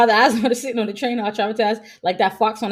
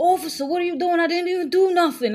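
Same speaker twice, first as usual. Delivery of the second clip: super thick put-on New York accent, pitched up; 8 semitones higher than usual. Retelling a commercial, imitating a new york accent. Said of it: "It's the New York accent".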